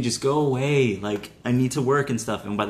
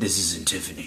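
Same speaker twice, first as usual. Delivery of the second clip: low, quiet, deep voice; 5 semitones lower, 5 dB quieter than usual. Retelling a man's reply on a phone call to Jill, deep voice. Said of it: "In that deep voice".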